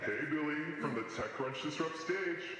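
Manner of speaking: monster-filtered processed voice. Demonstrating an app's voice filter options: monster voice filter. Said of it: "but also like a monster".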